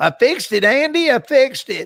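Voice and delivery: high-pitched small-town goober voice. Explaining how a mechanic would say a phrase, a speaker uses a Mayberry mechanic voice. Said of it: "like a goober from Mayberry would just say".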